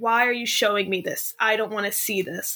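mock pleading voice. Retelling a scene where someone begs a ghost: imitating someone pleading. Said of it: "he starts pleading with the ghost".

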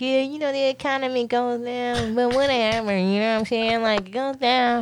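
easygoing, unbothered buddy voice. Retelling what friends in other fields told them, imitating friends talking. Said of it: "I love your impression".

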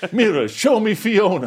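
very high cartoon lord voice with big pitch swoops. Friends trading Shrek quotes, one does the villain: Farquaad voice. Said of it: "You've got a pretty good Farquaad voice".

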